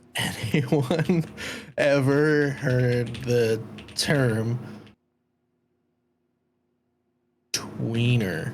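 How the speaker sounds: slow, deliberate pace. Asking the others whether anyone has heard a term: saying it slowly. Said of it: "You saying it slowly is funny".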